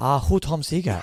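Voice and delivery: put-on Chinese accent throughout. Telling how he answers people after gigs, the speaker replies: mock chinese accent. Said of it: "I knew you were going to go Chinese accent".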